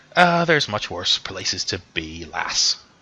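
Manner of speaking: words broken up by laughing. A character answers a companion during an alien invasion, laughing while speaking. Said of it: "He sort of just laughs and just goes".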